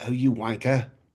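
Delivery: put-on English accent. Joking about reacting to someone on TV, said in an English accent. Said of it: "I'm speaking in an English accent".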